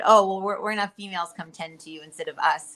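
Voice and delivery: ordinary talk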